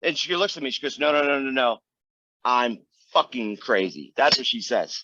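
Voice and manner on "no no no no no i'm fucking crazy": slow, deadly earnest, acted dead-serious tone. Retelling what a woman said while looking at the speaker, imitating a very serious tone. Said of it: "she said it very seriously".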